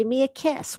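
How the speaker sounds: put-on old woman voice. Describing an old movie lady puckering up for a kiss: imitating an old lady wanting a kiss. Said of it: "old lady wanting a kiss".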